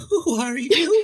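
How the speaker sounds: very high, goofy, silly put-on voice. Asking the other speaker a question after being asked for a silly voice. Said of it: "ask me in, like, a, a very, uh, silly voice".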